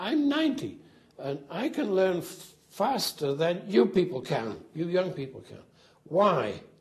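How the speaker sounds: squeaky, high voice swooping up and down. Imitate a ninety-year-old man addressing a bunch of young kids, in a squeaky Bertrand Russell voice. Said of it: "He got a very squeaky voice".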